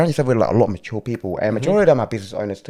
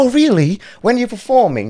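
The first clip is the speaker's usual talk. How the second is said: very high-pitched, fake put-on English accent; 12 semitones higher than usual. Retelling what a woman asked after hearing about the band, put-on English accent. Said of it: "Like, you know, English accent".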